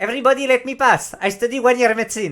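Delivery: botched, bad put-on Italian accent, high-pitched. Telling a story, voicing the nurse who thinks she's a neurosurgeon: attempted italian accent. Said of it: "je vais essayer de faire la- le- le- l'accent italien".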